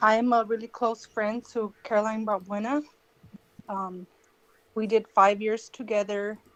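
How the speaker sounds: anxious, nervous speaking with ums. Caller given two minutes to speak about a close friend, nervous. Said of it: "sorry, I'm nervous".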